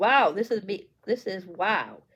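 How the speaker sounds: ordinary talk, nothing marked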